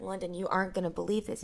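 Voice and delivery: ordinary talk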